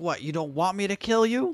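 put-on angry demanding voice. Retelling a character's line from a show, imitating someone angry. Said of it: "all mad".

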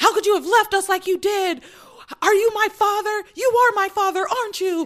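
mock, very high, relentless, loud demanding shouting. Retelling a tv scene where a character presses questions: imitating someone yelling. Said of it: "keeps yelling all of".

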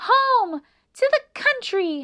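very high, squeaky, drawn-out little mouse voice. Annie, running off, answers Melissa, who asks where she is going, squeaking. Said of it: "squeaked Annie".

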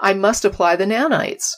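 ordinary delivery

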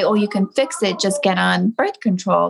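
ordinary talk, nothing marked

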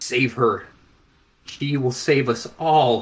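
words forced out choked and gasping. The narrator voices a man being choked, gasping out last words: gasped out while choking. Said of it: "he manages to gasp out".

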